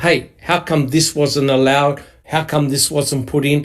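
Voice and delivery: ordinary delivery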